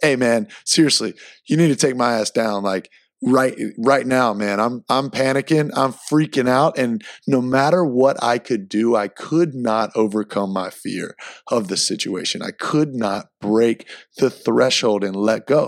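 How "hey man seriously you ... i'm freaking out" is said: ordinary talk, nothing marked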